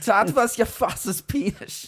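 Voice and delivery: put-on botched Viennese accent, very high-pitched. Parodying a repressed man's psychosexual interpretations, in a bad Viennese accent. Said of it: "I can't do a German or a Viennese accent".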